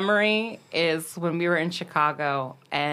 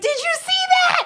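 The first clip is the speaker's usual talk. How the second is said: mock very high, excited shriek; 5 dB louder than usual. Retelling jumping up after a lucky pool shot, retelling a scream. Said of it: "I like jumped up and I was screaming".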